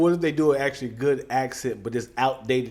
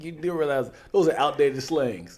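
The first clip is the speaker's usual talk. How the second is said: normal talking voice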